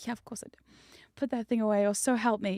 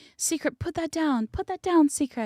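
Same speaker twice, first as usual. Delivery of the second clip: put-on high-pitched shrieking yell; 7 semitones higher, 3 dB louder than usual. Acting out imagined onlookers begging to put down a sledgehammer: imitating people screaming. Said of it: "five people behind me screaming".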